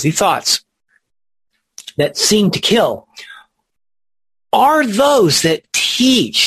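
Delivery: weight on teach. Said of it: "give it a little more weight".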